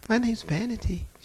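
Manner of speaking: sweet, demure, high-pitched lady voice. Retelling a demon speaking through a lady: imitating a sweet, demure voice. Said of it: "She sounded just as sweet and demure".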